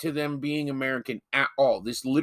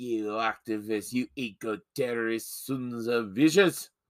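put-on slow Scottish accent; 3 semitones lower, 3 dB quieter than usual. Retelling a story, the speaker quotes a general in a Scottish accent. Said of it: "like he's from Scotland".

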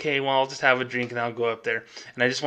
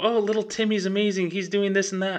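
mock glowing, beaming proud parent voice, pitched up; 8 semitones higher than usual. Imitating a parent talking about their kids: imitating a proud, beaming parent. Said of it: "light up and go".

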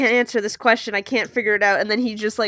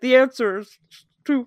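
mock words mushed around a full mouth; 3 semitones higher than usual. Retelling how Derek answered her with a mouthful of sandwich, imitating Derek with a mouthful. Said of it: "he's just there with his mouthful and he's like".

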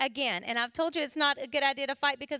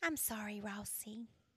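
put-on soft, sugary, sweet little-girl voice; 5 semitones lower, 14 dB quieter than usual. A mother retells her young daughter apologizing to her brother, imitating Hannah's sweet voice. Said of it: "And very sweetly".

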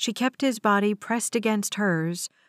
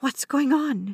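hushed whisper, higher pitch; 4 semitones higher than usual. A passenger asks the woman in the aisle seat, whispering. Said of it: "she whispered to the woman in the aisle seat".

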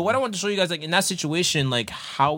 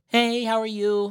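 high, put-on, fake-nice, sweet, polite voice; 5 semitones higher than usual.

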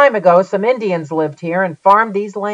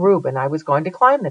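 plain

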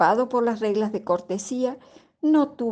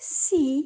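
timid, faltering stammer, much higher; 6 semitones higher than usual. Rubilda answers the devil's abrupt question; timid stammer. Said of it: "apenas pudo balbucear una tímida respuesta".

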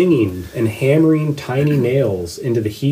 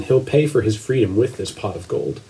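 ordinary talk

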